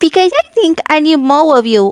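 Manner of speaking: put-on cutesy "ooh" voice. Delivering a pickup line in a playful exchange: cutesy uwu voice. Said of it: "say a pickup line in an ooh woo voice".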